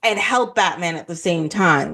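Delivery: ordinary talk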